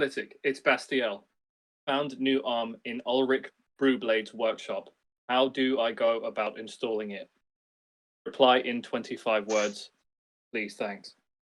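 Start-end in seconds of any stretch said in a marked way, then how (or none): none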